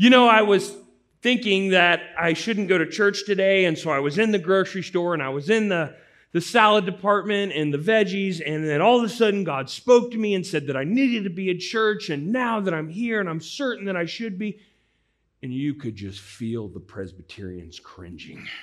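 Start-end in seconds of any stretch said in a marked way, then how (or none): 0.0-14.6 loud, pitched-up voice projecting over a whole room. Retelling a woman who stood up during a sermon, imitating her loud voice. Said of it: "starts talking in a loud voice and says".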